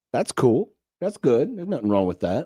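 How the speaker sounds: underwhelmed, disappointed, let-down tone. Reacting to news that someone is having spaghetti dinner, the speaker answers in a disappointed tone. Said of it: "you sound disappointed".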